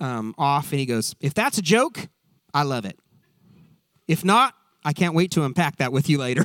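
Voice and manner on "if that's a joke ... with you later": put-on spoken in a southern US accent. Quoting what Ted says when a guy says something off: Ted southern accent impression. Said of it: "do it I'm in a southern accent".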